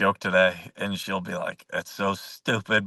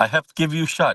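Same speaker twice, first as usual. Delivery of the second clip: bad, horrible, put-on Russian accent, pitched up; 8 semitones higher, 4 dB louder than usual. Playing a Russian nurse, in a horrible Russian accent. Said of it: "my horrible Russian accent".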